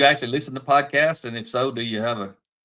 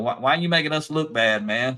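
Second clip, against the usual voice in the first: mocking, needling, sarcastic tone. Retelling a day shift coworker's complaint, imitating a sarcastic coworker. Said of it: "he walked up kinda sarcastic".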